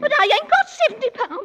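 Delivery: very high, shrill, loud sobbing wail, protesting tone. Protesting about money after a rebuke, crying. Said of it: "stop crying".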